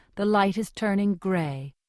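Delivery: plain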